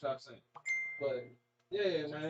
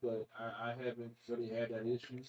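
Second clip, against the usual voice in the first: a bit let down, disappointed tone; 7 semitones lower, 5 dB quieter than usual. Saying something has never happened to him, sounding disappointed. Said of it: "Why does he sound disappointed?".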